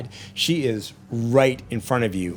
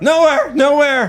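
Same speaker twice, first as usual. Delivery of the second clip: shouting, much higher and louder; 12 dB louder than usual. A man yanked out through a broken windshield answers his captor, shouting.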